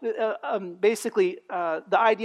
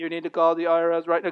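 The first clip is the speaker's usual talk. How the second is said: robotic automated voice, much lower; 4 semitones lower than usual. Imitating a scam phone message about the IRS in a robotic automated voice. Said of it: "it's like that robotronic voice".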